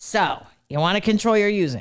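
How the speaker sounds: rough, hard-edged, raspy fatherly voice. Retelling a father's analogy about alcoholism: imitating dad's raspy hard voice. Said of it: "in his raspy ass hard voice".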